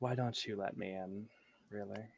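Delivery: voice trailing away. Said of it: "And the voice fades".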